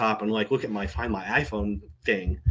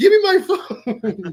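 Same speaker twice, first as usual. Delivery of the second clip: put-on, very high, loud, drawn-out hysterical yell; 6 dB louder than usual. Retelling demanding the phone back from a lady: retelling own hysterical yell.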